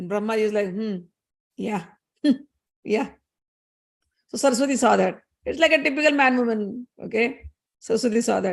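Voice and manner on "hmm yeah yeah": sarcastic chuckling laugh. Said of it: "laughing at me sarcastically".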